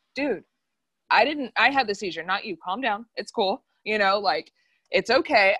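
normal talking voice

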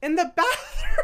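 high, laughing disbelief, cracking up while speaking.

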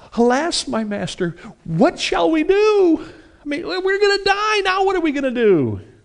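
very high-pitched, terror-stricken voice. Quoting the servant Gehazi's words to his master from 2 Kings, terrified. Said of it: "you can almost hear the terror in his voice".

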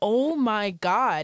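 excited, screamed exclamation. Recalling watching an incredible race drive, retelling a scream.

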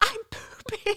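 mock, very high, shrieking, screaming cry. Telling a story about waiting for an epidural, retelling a scream. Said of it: "I start screaming".

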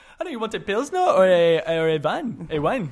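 fake German accent. Playing a character opposite a partner, the speaker uses a bad German accent. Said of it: "way better German accent than I do".

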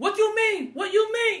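high-pitched voice in broken English. Retelling a movie scene in broken English: imitating Revy's broken English. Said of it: "Revy is speaking in broken English".

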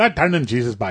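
Newfoundland-accented speech. Repeating the one phrase the other speaker can say in Newfie, Newfoundland accent. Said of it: "The only thing I can say in Newfie is".

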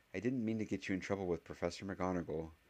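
plain

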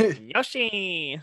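high, really nasal call pushed through the nose. Doing a game sound impression: nasal Yoshi voice. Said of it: "It's really nasally".

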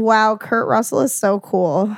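ordinary talk, nothing marked

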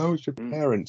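acted, crackling near-tears voice. Recounting a tv scene and quoting a character's reply, mimicking a crackling, tearful voice. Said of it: "his voice is crackling".

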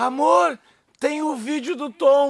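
very slow, drawn out, high, tearful with laughter. Husband retelling his wife's words, imitating her crying with laughter. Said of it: "minha mulher chorando de rir sentada no mesmo lugar e assim".

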